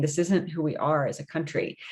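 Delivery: ordinary delivery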